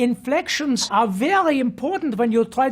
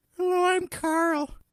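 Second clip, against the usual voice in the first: acted, pitched-up cartoon character voice; 5 semitones higher, 5 dB quieter than usual. Auditioning as Carl for a voice coach: Carl voice. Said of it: "Really great job. He's got that placement".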